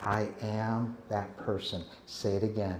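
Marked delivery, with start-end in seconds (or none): 0.0-1.8 very slow, deliberate, hushed half-whisper. Leading listeners through an exercise, modeling the phrase in a half-whisper. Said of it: "Let me hear the whisper".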